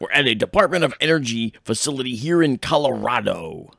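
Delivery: loud, with every syllable carefully overpronounced. Joining in a bit as Jesse Ventura: Jesse Ventura impression, deep, over-enunciating. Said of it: "deep, and he over-enunciates".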